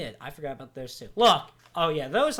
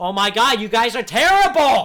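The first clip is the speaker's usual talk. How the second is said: full-volume, very loud, high yelling; 6 semitones higher, 12 dB louder than usual. Recounting watching a race and yelling at the drivers, retelling yelling at drivers. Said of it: "I'm just yelling at the driver's side".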